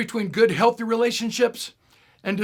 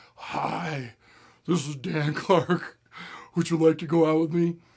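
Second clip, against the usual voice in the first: low, breathy voice, lower and quieter; 4 semitones lower, 5 dB quieter than usual. Retelling asking a girl out on the phone: low and breathy voice. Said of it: "practiced my voice to make sure it was low and breathy".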